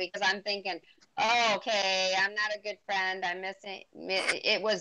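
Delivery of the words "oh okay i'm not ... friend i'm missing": ordinary delivery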